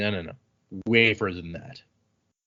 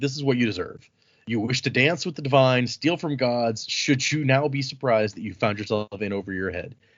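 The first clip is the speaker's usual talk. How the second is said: normal talking voice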